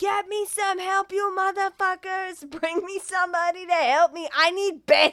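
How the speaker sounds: all-out shrill, loud screaming yell. Retelling a movie ending where a character yells for help: imitating Hector screaming. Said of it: "all you hear is Hector screaming".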